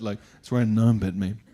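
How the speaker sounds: hushed, deadly serious. Retelling answering a man who asked about a cut on the arm: hushed voice. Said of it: "I even hushed my voice a bit".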